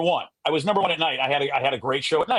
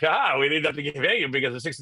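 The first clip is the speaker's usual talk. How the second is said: speaking while laughing. Retelling what the other guy said about bonuses: imitating someone laughing. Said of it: "he was always laughing like".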